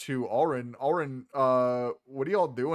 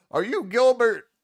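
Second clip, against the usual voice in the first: put-on very high, loud, tipsy drunken gnome voice; 10 semitones higher, 7 dB louder than usual. Narrating a scene where a stranger climbs into your vehicle, in a drunken gnome voice. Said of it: "drunken gnome uh, who looks at you and goes".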